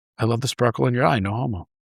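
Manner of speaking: soft, real quiet, dropped-down hushed voice. Retelling a comedy bit where a character gets quiet: quiet voice. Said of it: "he gets real quiet and he goes".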